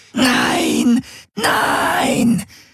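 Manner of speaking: mild, continuous scream, held small. Ulana struggles with hands and feet against Garland: screaming incessantly. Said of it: "Schrie Ulana unaufhörlich".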